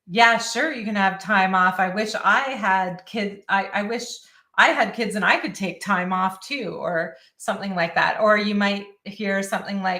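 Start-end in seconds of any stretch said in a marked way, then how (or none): none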